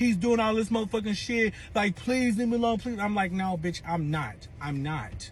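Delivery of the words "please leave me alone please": mock crying, higher and faster. Mocking how a man begged on a Facebook live, imitating someone crying. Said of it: "He's fucking crying like".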